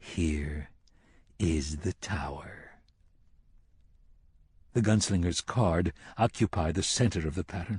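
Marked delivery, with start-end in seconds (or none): 0.0-2.7 hushed, soft, low, very drawn-out delivery.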